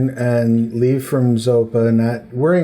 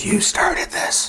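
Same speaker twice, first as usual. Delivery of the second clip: hushed, whispered creature monster voice; 9 semitones higher, 4 dB quieter than usual. Narrating a many-faced creature whose tongue speaks, creature's whisper. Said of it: "And it whispers".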